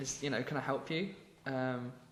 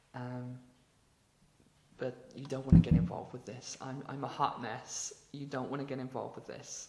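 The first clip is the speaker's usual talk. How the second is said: put-on hushed, pleading tones. Retelling a film scene where she warns him off: imitating hushed tones. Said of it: "And then in hushed tones".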